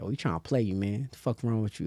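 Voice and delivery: hushed, very soft, taunting voice. Speaker describing the battle with the voice in their head, imitating inner critic voice. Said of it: "it's a voice like".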